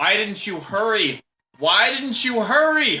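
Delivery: crying out, pitched high. Game master voices Xana calling into the players' minds, Xana's voice crying out. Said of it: "Xana's voice cries out to you in your minds".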